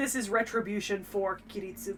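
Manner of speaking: normal talking voice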